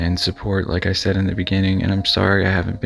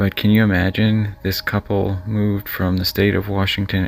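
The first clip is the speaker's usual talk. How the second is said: plain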